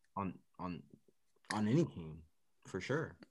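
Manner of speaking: low, dead-straight delivery, mocking.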